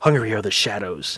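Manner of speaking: breathed. The Count, pausing his tale, speaks against her neck: breathed. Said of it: "he breathed against her neck".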